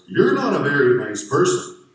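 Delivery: goofy, swooping, silly high yell, very loud. Retelling what he yelled back after opening the door, retelling a yell in a funny voice. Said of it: "yelled back in kind of a funny voice".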